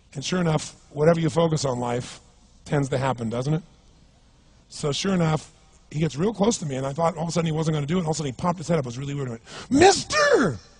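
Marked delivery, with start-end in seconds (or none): 9.7-10.5 very high, loud, strange-sounding bizarre voice. Retelling a man who came up to beg for money, imitating a bizarre-sounding voice. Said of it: "He had this really bizarre looking sounding voice".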